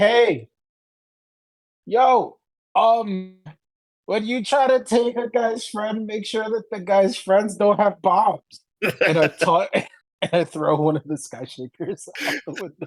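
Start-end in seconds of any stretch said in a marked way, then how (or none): 0.0-8.4 high, taunting, hollered yell. A player voices a character yelling down from a window: yelling down. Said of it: "I kind of yelled down".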